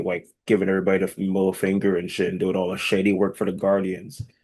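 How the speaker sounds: plain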